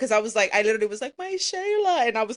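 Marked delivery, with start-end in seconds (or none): 1.2-2.1 high-pitched, whiny, put-on sobbing. Retelling own past words over TikTok in front of mom: fake crying. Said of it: "fake crying".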